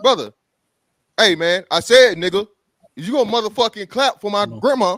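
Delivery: put-on aggressive man voice. Retelling a man getting up at a restaurant birthday: imitating an aggressive man. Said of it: "He get aggressive".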